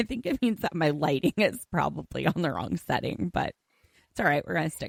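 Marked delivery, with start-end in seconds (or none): 0.0-3.3 words breaking up with laughter throughout. Joking about a purple aura on camera, laughing while talking. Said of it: "I'm laughing so hard".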